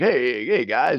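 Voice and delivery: radio DJ voice, lighthearted. Praising a pair of characters, the speaker imitates how Stitch talks: Stitch's radio DJ voice. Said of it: "He's doing like a radio D J voice".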